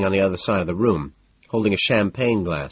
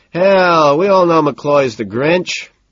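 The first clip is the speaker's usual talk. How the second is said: put-on loud, boozy, drunken bellow, pitched up; 8 semitones higher, 7 dB louder than usual. A narrator reads a drunk man teasing a grouchy colleague, bellowing drunkenly. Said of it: "Peterson bellows drunkenly".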